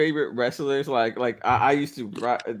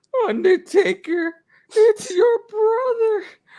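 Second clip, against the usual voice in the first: very high, loud, rough put-on manager voice; 6 dB louder than usual. Retelling how Paul Bearer introduced Undertaker's brother, attempt a Paul Bearer voice. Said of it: "I'm glad that you attempted the Bearer voice".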